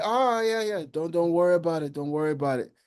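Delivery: high, light, easygoing, reassuring tone.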